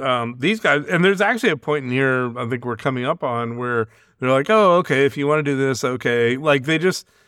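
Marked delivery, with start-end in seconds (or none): 4.5-6.4 uncaring, indifferent, shrugging tone. Retelling how the Cybermen respond to the humans: imitating uncaring Cybermen. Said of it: "they don't really care what the humans do".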